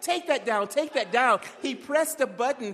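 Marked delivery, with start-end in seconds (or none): none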